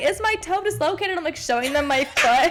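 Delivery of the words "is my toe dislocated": mock, high, tearful, hysterical sobbing. Retelling stubbing her toe, acting out her past self hysterically sobbing. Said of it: "I was hysterically like sobbing".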